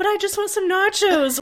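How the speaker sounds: loud, desperate pleading, very high. Asking whether this line could get them in anywhere, said in a desperate voice. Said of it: "if I just say in a desperate voice".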